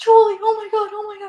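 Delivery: very high, shrill, frantic panicked cry. Retelling a grandma panicking when the door shuts: imitating grandma freaking out. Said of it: "she freaks out".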